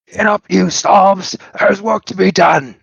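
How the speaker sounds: yelling in a shrill, very high goblin voice. The character looks at Calamity, turns, and yells in Goblin. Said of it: "yells in Goblin".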